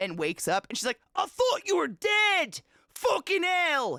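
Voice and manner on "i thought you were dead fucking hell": put-on striking Scottish accent, pitched way up. Retelling what she said when the cat woke up: amazing Scottish accent. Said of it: "In this amazing Scottish accent".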